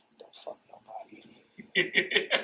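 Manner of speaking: hushed, unvoiced whisper. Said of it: "I whisper to Rick".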